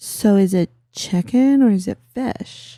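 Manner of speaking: very, very slow, drawn-out delivery. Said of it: "the [name] thing".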